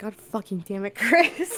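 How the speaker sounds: muttering, grumbling under breath. Cursing in character while prying boards off: muttering under breath. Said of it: "prying the boards off under my breath".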